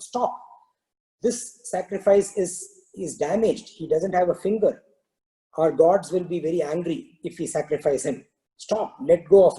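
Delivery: ordinary talk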